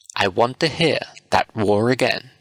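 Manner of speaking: plain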